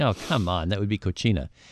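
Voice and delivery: ordinary talk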